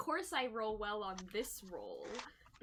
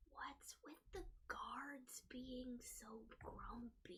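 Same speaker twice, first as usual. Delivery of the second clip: hushed, very quiet whisper; 2 semitones higher, 14 dB quieter than usual. Voicing Jessamine whispering a question to Talia: whispering as Jessamine. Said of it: "whisper to Talia as much as she can whisper".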